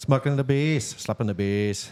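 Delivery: terrible fake Australian accent, way off. Mentioning restaurant people from Down Under, doing a bad Australian accent. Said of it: "My Australian accent's terrible".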